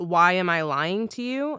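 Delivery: sudden, theatrical, yelled-out outburst. Recalling a performer's bit, the speaker acts out the performer's shout. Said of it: "But he shouts".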